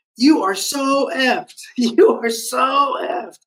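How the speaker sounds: put-on, very high, drawn-out hollering yell. Retelling a shipmate calling out down a hallway: imitating someone yelling. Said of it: "yelling that at me".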